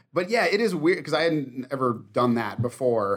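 usual speaking voice

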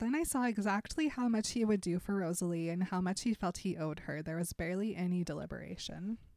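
plain

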